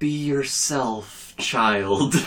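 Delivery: fluffy, empty-wisdom mentor voice. Retelling answering someone who asked for advice, in a put-on fluff and filler voice. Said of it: "I put on my best fluff and filler voice".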